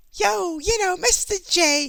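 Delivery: very high-pitched, drawn-out put-on voice. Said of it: "kinda like in Harley Quinn kinda fashion".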